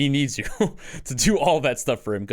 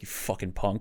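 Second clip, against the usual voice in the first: hushed, grumbled and muttered under the breath; 4 semitones lower, 8 dB quieter than usual. Retelling a grandma's muttered insult: imitating a mutter under the breath. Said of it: "under her breath".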